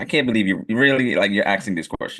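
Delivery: plain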